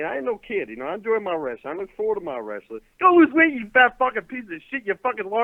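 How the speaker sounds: fake Southern accent, thrown on. Calling in to a show and ranting: put-on Southern accent. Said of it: "He even had to throw the Southern accent on".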